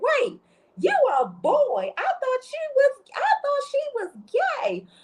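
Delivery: put-on wild, shrill, swooping sing-song scream, very high. Retelling a woman's reaction at a pregnancy announcement; imitating someone screaming. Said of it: "screaming like".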